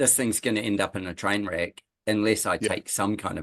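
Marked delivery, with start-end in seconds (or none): none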